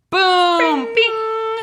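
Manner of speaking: high, loud game show dinging sound effects.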